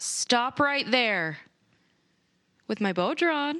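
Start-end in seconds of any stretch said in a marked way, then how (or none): 0.0-1.4 yelling, shouting. Playing a character with bow drawn, ordering someone to stop: yelling. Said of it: "Henley yells out".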